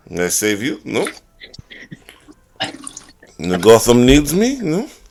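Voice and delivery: put-on Latin American accent.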